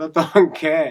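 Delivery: loud, high laughing outburst while speaking.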